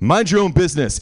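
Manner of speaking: stern, firm, authoritative voice. Retelling a run-in with a fellow passenger, quoting their reply in a retold authoritative voice. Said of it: "I said in an authoritative voice".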